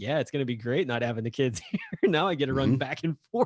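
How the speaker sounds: put-on heavy sarcasm, loud and griping. Retelling a parody video of a dad after school drop-off: imitating a sarcastic dad. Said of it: "he's being very sarcastic".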